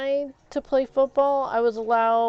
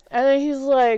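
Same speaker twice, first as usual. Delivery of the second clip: normal talking voice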